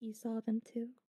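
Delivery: hushed, barely audible, nervous murmur. Narrating a game scene, a character asks the players in a very quiet voice. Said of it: "He says to you in a very quiet voice".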